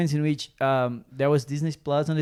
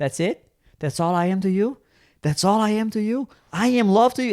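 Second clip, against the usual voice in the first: acted heated, angry, pitched-up delivery; 6 semitones higher than usual. Retelling a serious noir scene with a friend: imitating an angry reply. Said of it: "he gets angry at her".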